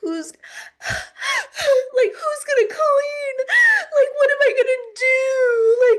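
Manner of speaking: put-on very high, slow sobbing wail, "do" stretched out. Retelling a parent's tearful plea when leaving home: imitating mom sobbing.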